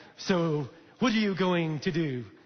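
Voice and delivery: bad, fake, terrible French accent, drawn out. Describing slapping someone with a glove as a challenge: terrible French accent. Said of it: "It's a terrible French accent".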